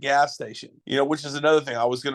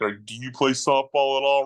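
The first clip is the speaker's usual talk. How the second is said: mock tone dripping with heavy sarcasm. Retelling how someone questioned playing softball: imitating a sarcastic question. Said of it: "Real sarcastic".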